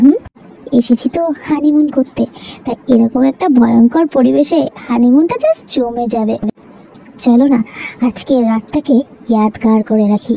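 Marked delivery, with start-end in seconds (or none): none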